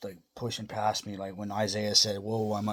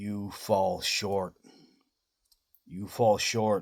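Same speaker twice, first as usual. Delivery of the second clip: mock thundering, loud, booming voice; 4 dB louder than usual. Telling a story, quoting a voice he heard: loud booming voice. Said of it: "in a loud booming voice".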